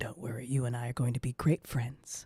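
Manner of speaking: speaking very softly. Narrating the voice Anais hears in her head as she wakes, very soft voice. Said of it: "you hear a voice say very softly in your head".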